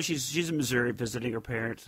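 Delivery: normal talking voice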